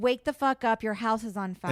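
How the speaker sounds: normal talking voice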